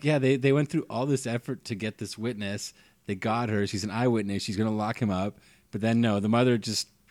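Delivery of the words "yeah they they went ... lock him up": normal talking voice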